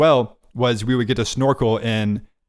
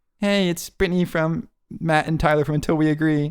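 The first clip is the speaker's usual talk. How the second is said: put-on St. Lucian island accent, pitched up; 5 semitones higher than usual. Speaker imitates someone from St. Lucia listening to Until We Agree, St. Lucian accent impression. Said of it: "here's my impression of someone from St. Lucia".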